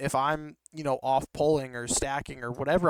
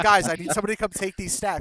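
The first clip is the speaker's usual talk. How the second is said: frustrated, upset yell, high pitched; 6 semitones higher, 5 dB louder than usual. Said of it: "starts getting upset and just starts yelling".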